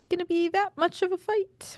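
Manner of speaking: sudden high, rising voice jump. Talking about a hockey series, the speaker's voice suddenly going high. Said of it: "My voice just went high for no reason there".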